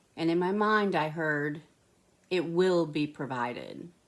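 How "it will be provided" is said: play-acted grave, earnest, solemn, serious voice. Retelling a voice heard in the mind: serious voice. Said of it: "in their serious voice".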